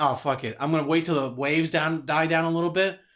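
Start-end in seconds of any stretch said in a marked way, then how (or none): none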